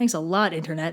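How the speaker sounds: sarcastic tone. Narrator finishing a point about the pressure of online content, sarcastic.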